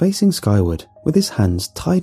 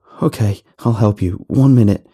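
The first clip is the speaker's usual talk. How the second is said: plain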